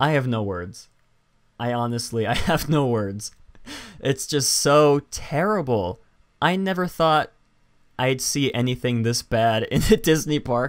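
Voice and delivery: speaking with stifled laughter under the words. Looking at something in a disney park, the speaker tries not to laugh out loud. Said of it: "I'm trying not to laugh out loud".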